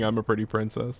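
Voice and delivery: ordinary talk, nothing marked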